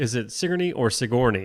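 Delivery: plain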